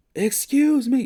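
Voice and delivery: very high, shrill, loud, sassy voice full of attitude. Showing how a woman spoke to him, mock-sassy, loud attitude. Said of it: "like that, like a little sauce to it".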